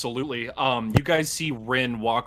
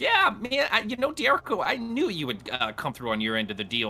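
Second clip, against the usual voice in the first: small puny imp voice, higher pitched; 8 semitones higher than usual. Voicing a puny little imp speaking to Diarco: puny little imp voice. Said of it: "now he's just a puny little imp, and he goes".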